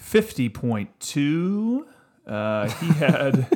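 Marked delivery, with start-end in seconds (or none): 0.0-1.9 radio-style announcer delivery, swooping and high. Reading out a player's fantasy points: radio announcer voice. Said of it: "That was a little radio-ish".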